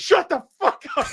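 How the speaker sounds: mock yelling, pitched very high. Retelling how a man answered the phone: imitating someone yelling. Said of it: "he's yelling at the cat?".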